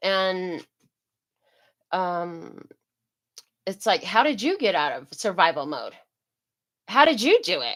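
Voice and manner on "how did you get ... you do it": put-on sassy tone, full of attitude. Speaker retells a question people put to them, with mock attitude. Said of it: "you hear the attitude... you can't say that with a normal voice?".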